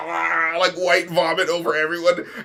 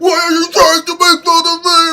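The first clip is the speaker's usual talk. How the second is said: goofy, cartoonish, silly, high, raised voice; 11 semitones higher, 9 dB louder than usual. Repeating how a man said a line, in a silly voice. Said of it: "he's saying it in a silly voice though".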